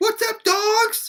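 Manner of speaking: put-on very high child voice. Read the boy greeting the group that walked into him, in a high-pitched voice. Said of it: "He said in a high pitched voice".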